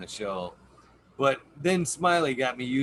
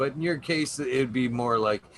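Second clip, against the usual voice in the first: ordinary delivery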